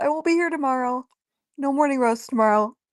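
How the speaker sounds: speech stretched by yawning. Answering a question about the next few days, yawning while talking. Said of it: "Sorry, I'm yawning".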